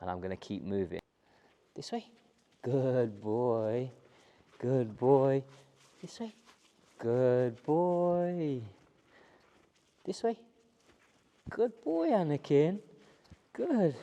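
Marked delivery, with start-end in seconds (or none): 1.7-13.9 very slow, high, sing-song, nice praising tone. Guiding the dog anakin while moving, in a nice praising tone for dog. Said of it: "that nice tone of voice that he understands means that he's doing well".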